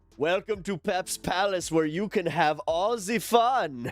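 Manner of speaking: put-on German accent. Playing a bar keeper in a role-playing game: put-on german accent. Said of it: "Why am I German?".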